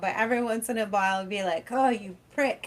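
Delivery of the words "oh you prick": exasperated, frustrated put-on British accent. Retelling a british guy's blooper reel: imitating a frustrated british guy. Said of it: "he was getting so frustrated with it".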